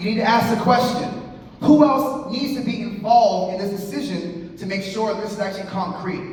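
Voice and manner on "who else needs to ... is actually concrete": plain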